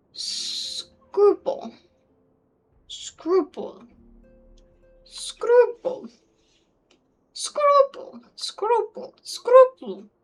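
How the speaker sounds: little puppet-creature voice, very high and loud. Speaker repeating a word over and over: Dark Crystal creature voice. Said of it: "I sound like those things from the Dark Crystal".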